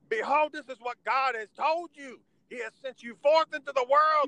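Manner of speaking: very high, loud, fired-up screaming preacher voice. Retelling a Friday night church sermon, imitating a screaming preacher. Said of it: "this guy was screaming".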